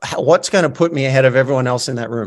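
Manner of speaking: ordinary talk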